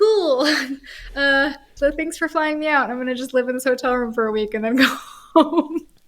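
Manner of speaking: high-pitched, laughing, sarcastic aside.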